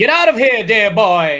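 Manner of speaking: very loud, booming, slow swooping drawl. Showing how a comic-book character sounds when reading: Laszlo voice. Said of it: "he's Laszlo from What We Do in the Shadows".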